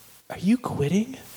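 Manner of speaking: sweetest possible man's voice. Retelling how a big ex-cop looked up and asked a question, imitating his softest, sweetest voice. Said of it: "with the softest, sweetest voice".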